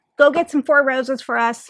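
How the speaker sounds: usual speaking voice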